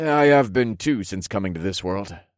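ordinary delivery, nothing marked

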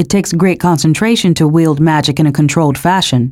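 plain

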